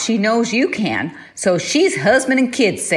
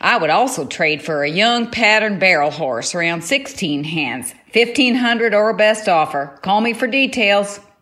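fake Southern US accent. Reading a horse trade ad aloud, in a put-on Southern accent. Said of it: "I love the Canadian doing the southern".

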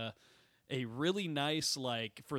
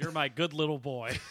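motherly voice; 4 dB louder than usual. Retelling Mom's reply to watching a comedy show: imitating Mom's voice. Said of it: "She doesn't sound like that".

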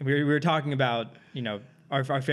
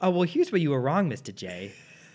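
put-on cartoon villainess voice; 4 semitones higher than usual. Imagining a heist film, do Harley's voiceover to Mr. J in a Harley voice impression. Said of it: "your impersonation of her voice is actually really good".

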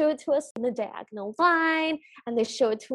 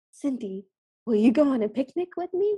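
ghostly voice floating like a ghost. Recapping a scene, quoting a remembered invitation in Philip's ghostly voice. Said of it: "ghostly voice going".

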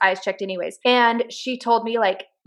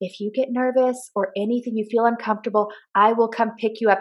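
hushed whisper. Retelling kissing him goodbye without embarrassing him, retelling a whisper. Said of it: "I'm like whispering in his ear".

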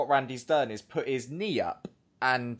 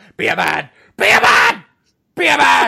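mock screaming, higher and louder; 9 semitones higher, 14 dB louder than usual. Retelling a wrestler confronting an opponent after losing: imitating a wrestler screaming. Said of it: "Just screaming in his face".

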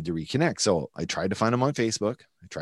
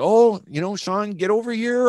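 put-on very high, loud Italian mom accent, calling out; 12 semitones higher, 6 dB louder than usual. Recalling a dream of a friend's mom serving pasta, imitating Rita's accent. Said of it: "with the accent".

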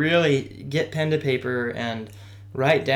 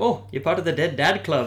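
put-on really thick, heavy Welsh accent all the way; 4 semitones higher than usual. Retelling what a woman said to the speaker while running, in a thick Welsh accent. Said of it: "with her really thick Wales accent".

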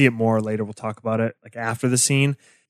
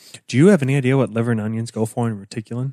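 dry, droll, put-on delivery. Retelling a line from a scene: dry, droll Mulder delivery. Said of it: "his dry, droll delivery".

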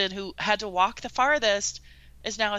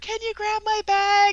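put-on yell, much higher pitch; 13 semitones higher, 5 dB louder than usual. Retelling how a woman sent out yelled back to her friend, retelling a yell back. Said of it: "she's yelling back to her friend".

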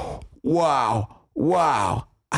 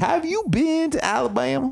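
woman's voice; 13 semitones higher than usual. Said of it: "I'll show you what it like".

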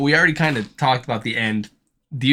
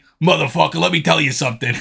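rough, creaky, gritty tough-guy voice; 3 semitones higher, 3 dB louder than usual. Doing a voice the cartoon character could have: Joey Diaz voice. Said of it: "He's like".

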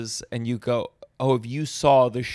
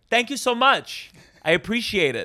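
acted, strange, overloud voice, very high pitched; 10 semitones higher than usual. Recalling answering people who said they were fans of his work, loud. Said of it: "I like talked like that and loud".

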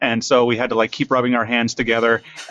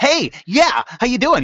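put-on hyperactive character voice, higher; 12 semitones higher than usual. Retelling the voice created for the pouch character: hyperactive Peter Pouch voice. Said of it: "very, like, hyperactive".

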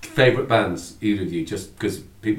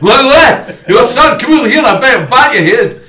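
very loud, very high, shrill fake Scottish accent; 18 dB louder than usual. Joking that a band's name sounded like a threat, bad scottish accent. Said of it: "I don't know if that was Scottish".

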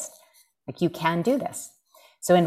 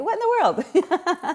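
very high, slow, sarcastic drawl; 14 semitones higher than usual. Speaker retelling what a man said to her, retelling a sarcastic remark. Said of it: "this is where like the sarcasm is like".

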